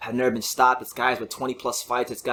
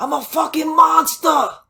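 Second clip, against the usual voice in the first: very high, very slow, very loud New York bellow; 8 dB louder than usual. Retelling a boxer's shout on the ropes after a knockout: imitating Edgar Berlanga yelling in New York accent. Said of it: "he yelled out with his New York accent".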